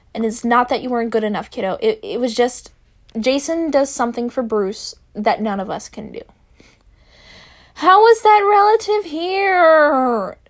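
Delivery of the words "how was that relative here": very high-pitched, very slow, drawn-out whine. Tim, told by Dick that Jason does something for Bruce, whining. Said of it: "Tim whined".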